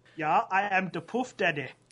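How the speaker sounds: put-on German accent. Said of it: "[name] German accent".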